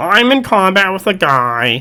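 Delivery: insufferable know-it-all voice. Recounting an argument someone had on the Discord, in an asshole nerd voice. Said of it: "I'm using my asshole nerd voice".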